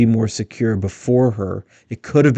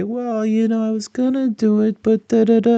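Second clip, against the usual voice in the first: put-on very high whiny child voice; 11 semitones higher than usual. Criticizing the vice president's way of speaking, imitating a kid's homework excuse. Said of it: "you hear this when when your kid didn't do their homework".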